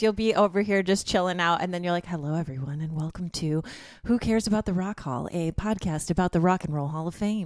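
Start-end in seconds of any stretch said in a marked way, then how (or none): 2.1-7.5 earnest, serious, professional public-radio announcer delivery. Teasing the co-host by imitating how they open the podcast, in an NPR voice. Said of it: "you put on a little bit of an NPR voice".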